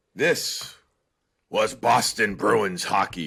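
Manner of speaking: put-on sports announcer voice. Speaker introduces talk about a Bruins game, worst, best announcer voice. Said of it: "best announcer voice".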